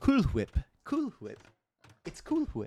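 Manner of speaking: very high, swooping, sing-song cartoon voice. Asked for Stewie quotes, the speaker tries them in his voice: Stewie voice. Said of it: "I'm gonna say it in his in his voice though".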